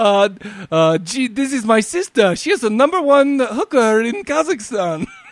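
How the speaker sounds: high put-on Kazakh accent. Recalling a funny scene with another speaker: Borat impression.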